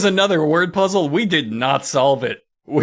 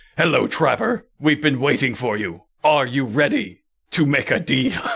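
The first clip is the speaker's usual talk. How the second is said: put-on altered, modulated voice; 4 semitones lower than usual. Retelling a comedy bit where a voice answers the phone; modulated voice. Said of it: "a very modulated voice".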